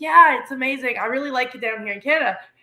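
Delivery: plain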